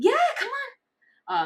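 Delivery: very high, eager, excited cheering tone. Demonstrating praise tones used with a dog, showing an excited praise tone. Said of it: "if I want a bit more excitement".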